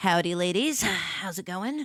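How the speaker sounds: full-swagger western cowboy voice. Kicking open a bathroom stall to greet the ladies inside, Western saloon greeting. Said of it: "Like I'm stepping into a saloon in a Western".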